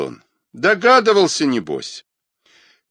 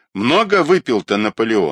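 plain

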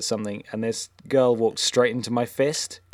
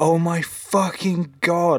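mock scream, pitched much higher; 6 semitones higher, 3 dB louder than usual. Retelling how Simon screamed at a woman, imitating Simon screaming. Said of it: "Simon just starts screaming at her".

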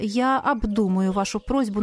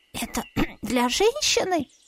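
stunned, shocked little squeak; 2 semitones higher than usual. Hearing the narrator's suggestion, someone listening squeaks a shocked question. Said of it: "Потрясенно пропищал кто-то".

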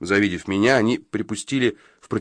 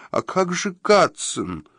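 high, quavering, unsteady, trembling voice; 9 semitones higher than usual. Narrator voicing a woman's question in a story, trembling voice. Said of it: "дрожащим голосом спросила Периджи".

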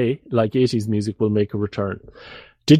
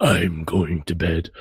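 spooky, creepy, low put-on voice; 5 semitones lower than usual. Confessing what they sometimes say when going to bed, in a scary voice. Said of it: "sometimes I do like a scary voice".

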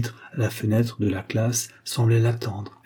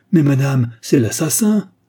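loud crying out; 4 semitones higher, 7 dB louder than usual. A voice behind Hélène calls to her as the school is invaded, crying out. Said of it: "une voix cria".

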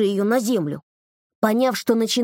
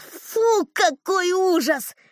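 disgusted, revolted shout, pitched up; 8 semitones higher than usual. The narrator realizes he is caked in dried dirt and cries out, shouted in disgust. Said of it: "я закричал".

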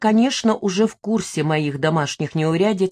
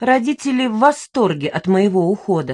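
ordinary delivery, nothing marked

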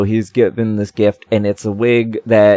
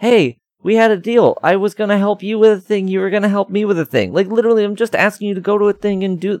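high-pitched, indignant voice. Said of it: "It's like".

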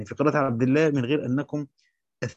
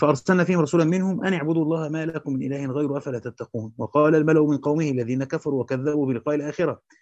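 ordinary delivery

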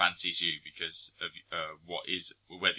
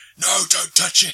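very high, shrill scream at full volume; 13 semitones higher, 13 dB louder than usual. Retelling a video of a heavy deadlift: imitating Hugh Jackman screaming. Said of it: "he's just screaming".

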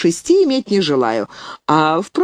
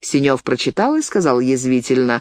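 ordinary delivery, nothing marked

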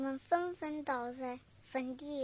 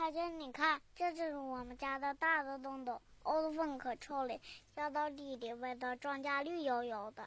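usual speaking voice

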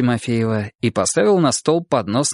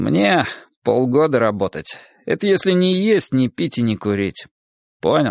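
plain reading voice

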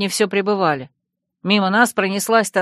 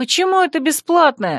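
high, outraged, indignant tone; 7 semitones higher than usual. Naika retorts to Urvuk's jibe, indignant. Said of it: "возмутилась я".

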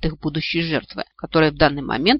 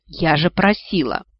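ordinary delivery

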